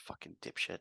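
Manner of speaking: hushed, barely voiced mumble under the breath. The game master voices Finn walking away after healing a player, mumbling under his breath. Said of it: "mumbling under his breath".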